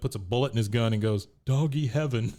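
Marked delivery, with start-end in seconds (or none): 1.4-2.3 acted, choked up, voice catching on words. Retelling a scene where Hank loads his gun, imitating a choked-up voice. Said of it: "he kinda gets choked up".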